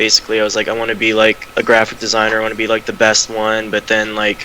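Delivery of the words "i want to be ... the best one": normal talking voice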